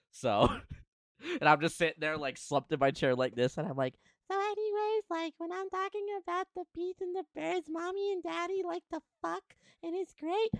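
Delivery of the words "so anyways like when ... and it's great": very high, put-on child's voice. Retelling a childhood moment, in a kid voice. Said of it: "Chat hates my kid voice".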